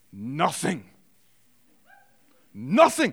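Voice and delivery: swooping put-on German accent, lecturer voice. Quoting the man who questioned the silent students, in a german accent. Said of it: "in German accent, I'm going to do my best".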